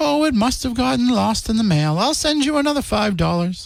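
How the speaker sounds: put-on bad, high-pitched grandma voice. Acting out a grandma replying to her grandchild, terrible grandma impression. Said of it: "That was a terrible grandma impression".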